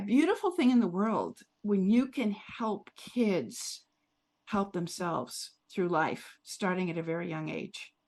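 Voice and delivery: teary, choked-up voice, near crying. A speaker talking about the skills they teach, about to cry. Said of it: "I'm going to cry".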